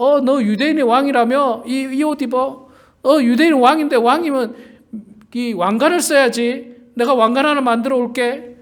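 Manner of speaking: sneering voice.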